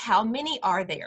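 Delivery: ordinary delivery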